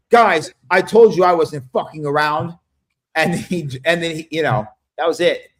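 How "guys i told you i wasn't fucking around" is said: ordinary delivery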